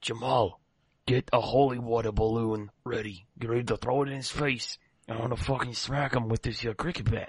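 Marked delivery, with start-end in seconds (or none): 0.0-4.8 hushed, whispered aside. A player's character speaks aside to a companion, whispering to the side. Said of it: "I whisper to the side and say".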